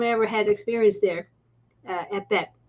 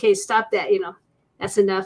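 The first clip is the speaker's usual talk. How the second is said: normal talking voice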